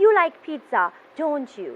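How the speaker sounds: pitch falls at the end of don't you. Tag question asking for confirmation, falling pitch on don't you. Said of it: "you have a falling intonation towards the end of your question".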